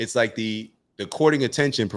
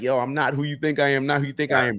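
put-on desperate pleading voice, higher; 5 semitones higher than usual. Retelling how a man grabbed by a mob begged: imitating someone pleading. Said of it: "he was pleading like".

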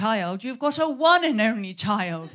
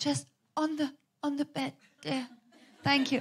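mock, exaggerated frail, feeble sickbed voice; 4 semitones higher, 7 dB quieter than usual. Retelling asking her son for toast in bed: milking being ill. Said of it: "I was milking it a bit".

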